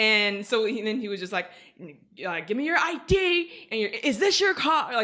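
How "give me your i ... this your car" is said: mock very high, shrill, loud yell. Retelling the officer demanding an id: imitating an officer yelling loudly. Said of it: "very loudly yelling at me".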